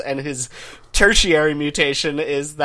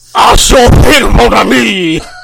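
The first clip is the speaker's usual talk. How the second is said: put-on sexier voice, louder and higher pitched; 7 semitones higher, 12 dB louder than usual. Joking about the X-Men, the speaker answers as Gambit in a Gambit voice. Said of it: "you just found a sexier voice than the earlier one".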